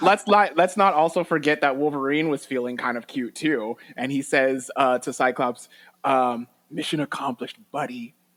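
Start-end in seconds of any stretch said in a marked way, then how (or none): 6.7-8.1 very soft voice. Recapping a scene where Wolverine speaks to Cyclops, soft un-Wolverine-like Wolverine voice. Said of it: "in like a very like soft, like not Wolverine voice".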